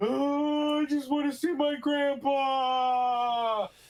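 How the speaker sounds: very high, loud, shrill fake tearful wail. A player's character fakes tears to be taken to his sick grandpa: loud fake-crying plea. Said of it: "as loud as possible".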